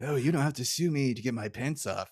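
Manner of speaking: very creepy, gross, leering delivery. Retelling a cartoon scene, quoting Burns: creepy Mr. Burns voice. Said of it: "Burns gives this very creepy".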